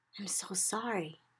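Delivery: very quiet, soft, hushed, barely-there half-whisper. A girl speaks to someone who hears every sound far too loudly: half-whispering. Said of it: "Sophie whispered".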